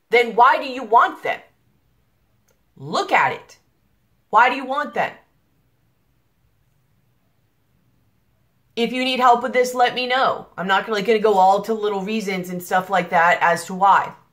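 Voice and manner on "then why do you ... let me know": heated, fired-up, impassioned, passionate delivery. A speaker presses the audience with pointed questions, heated. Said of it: "I'm sorry if I sound really heated right now".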